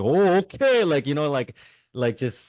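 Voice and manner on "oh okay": exaggerated Korean accent, pitched up. Explaining how he used to make fun of the accent, doing an exaggerated korean accent. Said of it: "make fun of Korean accent".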